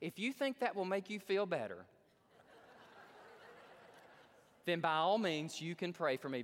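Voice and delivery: haughty, patronizing, condescending, arrogant tone. Retelling a dying atheist's answer to a plea to pray: imitating a condescending arrogant tone. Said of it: "Very condescendingly, very arrogant".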